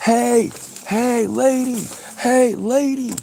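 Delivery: play-acted, very high, very slow, drawn-out screaming. Retelling a video of a man chasing a minivan: imitating a man screaming. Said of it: "screaming at her".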